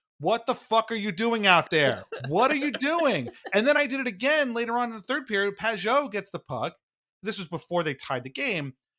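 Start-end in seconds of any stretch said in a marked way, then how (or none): 0.2-3.3 frustrated, exasperated yelled outburst. Retelling yelling at a hockey player on TV; retelling his own yell. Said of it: "I'm literally yelling at the T V".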